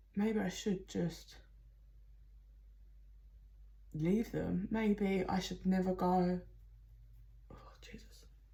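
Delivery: voice choking up with emotion. Describing the feelings a reading shows, getting choked up. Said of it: "I'm getting choked up".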